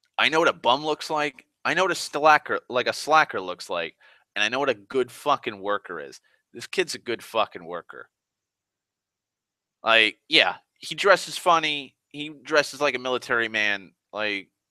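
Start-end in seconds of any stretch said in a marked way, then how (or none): none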